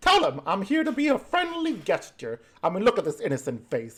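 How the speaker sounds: playful, pouty, sing-song little imp voice. Narrating a fantasy scene, the speaker voices an imp leaning on another character's shoulder, playful and pouty. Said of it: "He gives you like a little pouty, playful face".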